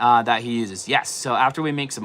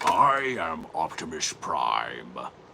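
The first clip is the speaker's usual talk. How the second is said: very low, deep, hushed, very slow drawn-out delivery; 8 semitones lower, 5 dB quieter than usual. Answering another speaker's dare to do the character, Optimus Prime voice. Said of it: "Bet you can't do Optimus Prime".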